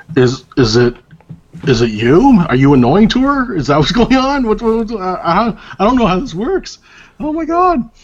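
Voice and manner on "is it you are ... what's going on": playful teasing, louder and faster. Speaker teases someone over a baby crying in the background, teasing. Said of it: "I'm teasing you there".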